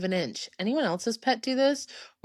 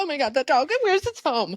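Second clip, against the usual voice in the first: mock high, panicked, freaking-out outburst; 5 semitones higher than usual. Retelling own reaction to loose dogs in the first weeks: imitating own past panic. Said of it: "freaking out".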